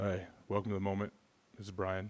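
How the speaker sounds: soft, flat monotone. Opening tonight's podcast in honor of your mentor, do a monotone Brian Koppelman impression. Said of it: "I'm trying to go monotone tonight in honor of".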